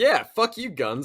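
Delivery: trying an American accent. Drinking Kentucky bourbon and trying out an American accent. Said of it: "Good American accent".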